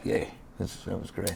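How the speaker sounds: mock barely-there whispered cheer, flat and unexcited. Retelling how a driver reacts after a win: imitating a flat, unemotional cheer. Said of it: "he's not an emotional guy at all".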